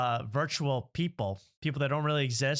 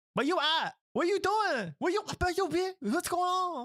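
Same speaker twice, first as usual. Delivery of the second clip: put-on very high, childish eight-year-old kid voice. Mocking how two guys talk, imitating talking like an eight-year-old. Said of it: "why do they talk like they're eight years old?".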